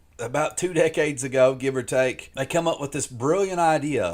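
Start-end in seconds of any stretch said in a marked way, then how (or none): none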